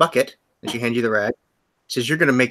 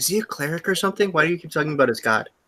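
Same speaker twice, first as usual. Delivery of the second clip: acted, soft, hushed half-whisper; 4 semitones higher, 5 dB quieter than usual. Voicing a character who leans in and asks a player something: half-whispering in character. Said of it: "he whispers to you".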